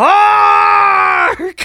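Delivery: put-on, very high, very loud yell. Retelling a movie scene: imitating Willem Dafoe yelling. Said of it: "yells the greatest fucking just".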